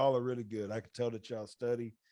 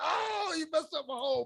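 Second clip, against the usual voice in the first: mock squealing scream, very high. Recounting how she took Josh Allen in his draft: retelling his own scream. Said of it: "I was screaming like".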